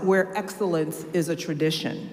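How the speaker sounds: plain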